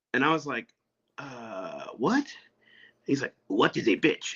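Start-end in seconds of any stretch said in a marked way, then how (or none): 3.4-4.3 put-on heavy, rough, gruff old man voice. Retelling what a short old man asked, in a gruff old man voice. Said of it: "kind of gruff voice".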